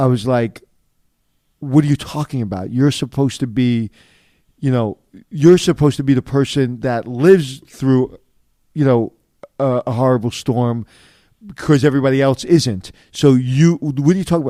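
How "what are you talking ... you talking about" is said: ordinary talk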